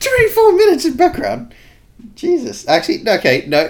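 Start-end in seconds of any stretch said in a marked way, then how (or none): 0.0-2.7 raised pitch, higher and louder. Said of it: "I say that in a high-pitched voice".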